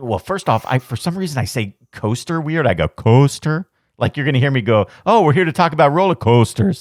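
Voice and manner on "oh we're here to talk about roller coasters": almost Canadian, just a slight tinge. Speaker shows how they sound talking about roller coasters, almost Canadian accent. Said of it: "almost Canadian".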